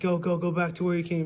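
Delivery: acted-out, high, screaming yell. Retelling how someone screamed at them to turn back: imitating someone screaming. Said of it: "he's like".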